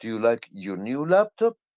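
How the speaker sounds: laptop said with upward lift. Speaker demonstrating how a yes-or-no question sounds: rising pitch at question end. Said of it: "my my my voice goes up".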